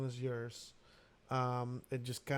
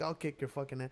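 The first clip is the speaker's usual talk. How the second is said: put-on tough Texas accent. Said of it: "he sounds like a Texas dude".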